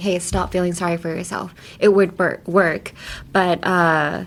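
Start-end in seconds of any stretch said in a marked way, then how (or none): none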